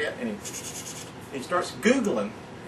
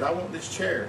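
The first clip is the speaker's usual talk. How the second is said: ordinary delivery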